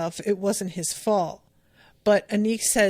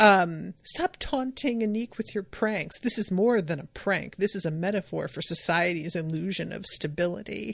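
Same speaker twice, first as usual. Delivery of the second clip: ordinary delivery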